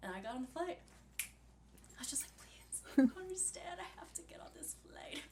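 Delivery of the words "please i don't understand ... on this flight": whispery, breathy, pretend-crying, fake-tearful begging plea. Retelling begging airline staff for a seat: imitating fake crying plea. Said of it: "Fake tears".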